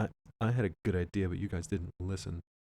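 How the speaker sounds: put-on fairly quiet, soft, sulky, moping kid voice. Imitating the general as a quiet kid kicking at sand: quiet playground-kid voice. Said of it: "kicking at the sand and he's kinda quiet and he's like".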